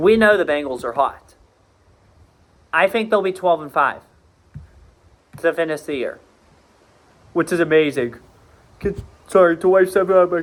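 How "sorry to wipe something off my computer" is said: speaking mid-yawn. Speaker previewing the Ravens schedule apologizes, yawning. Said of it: "I'm yawning".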